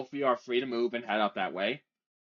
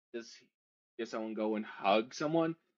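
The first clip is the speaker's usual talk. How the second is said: ordinary talk, nothing marked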